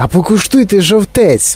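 eager, high, ringing called-out exclamation. Reading a man calling out to a group in a field; exclaiming. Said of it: "вигукнув містер Вонка".

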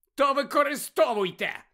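high, sharp, snapping delivery. Harry answers Malfoy's threat to use their wands; snapping back. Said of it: "огризнувся Гаррі".

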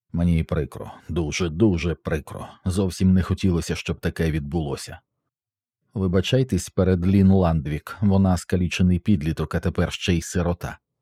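ordinary delivery

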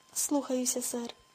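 plain reading voice

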